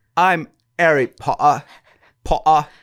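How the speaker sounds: slow British accent. Asked which TV character they are, told to say it with the accent: Harry Potter British accent. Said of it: "you didn't say it with the accent".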